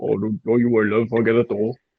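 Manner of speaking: put-on thick, deep, heavy Welsh accent. Retelling a huge bloke offering to get the door, imitating his thick, deep Welsh accent. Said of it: "thickest, like, deepest Welsh accent ever".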